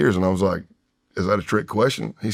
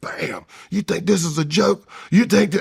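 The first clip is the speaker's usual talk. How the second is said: high, angry, aggressive shouting yell; 8 semitones higher than usual. Retelling a man who jumped on the table at them, imitating someone yelling. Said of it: "while he's yelling at me".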